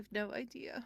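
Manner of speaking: barely audible, faint, high, hushed little voice. Voicing a hidden figure answering the players: faintest voice. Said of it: "You hear just the faintest voice that just goes".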